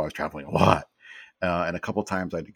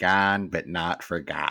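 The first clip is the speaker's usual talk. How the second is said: Chicago-accented speech. Reading out the words below an old photo, in a chicago accent. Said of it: "and I'll do this in my best Chicago accent".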